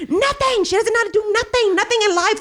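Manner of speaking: shrill, very high, furious angry screaming. Recounting screaming about a sister who couldn't do the paper; retelling angry screaming. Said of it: "And I'd just be screaming like".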